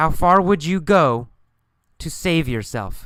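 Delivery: split by a pause before to save yourself. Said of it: "this time with pauses after the key phrases".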